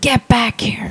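play-acted, very stern, firm voice. Retelling a man's voice heard in a recording: imitating a very stern man's voice. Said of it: "very stern".

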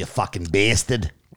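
bad put-on Scottish accent. Giving a shout-out to someone all the way from Scotland, bad Scottish accent. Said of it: "the worst accent ever".

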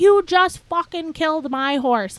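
acted top-of-lungs scream. Retelling screaming at people who wouldn't look at the speaker, retelling screaming at top of lungs. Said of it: "screaming at the top of my lungs".

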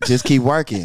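smooth-talking put-on voice. Retelling a mentor's advice on a stroll: imitating Andre's smooth voice. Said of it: "the impression, though, is killing me".

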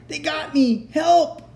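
very high, long, drawn-out wailing cry. After firing his pistol again, he calls out to the men; crying out.

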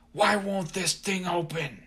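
high, angry snarl. Reading a story aloud, voice a man snarling at the narrator. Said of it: "and he snarled".

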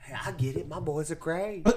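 high, loud, put-on motherly voice. Speaker acts out what a co-host's mom said, impression of the co-host's mom. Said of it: "That's my impression of your mom".

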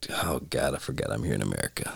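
mock dismissive, breathy, scoffing whisper. Speaker recounts how a man reacted to a question; retelling a scoff. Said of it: "he just scoffed at the question like".

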